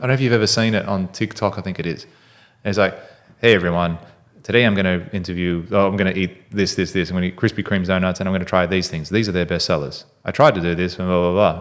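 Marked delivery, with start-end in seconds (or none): 3.4-11.6 put-on flat deadpan monotone delivery. Speaker acts out a TikTok food reviewer's intro, imitating a monotone TikToker. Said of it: "he speaks in sort of monotone".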